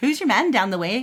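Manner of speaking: put-on sing-song Irish accent.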